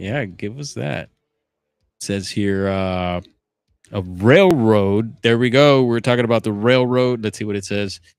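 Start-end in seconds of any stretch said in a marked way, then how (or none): 3.9-7.2 fast, excited rush of speech. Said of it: "Sorry, getting excited here".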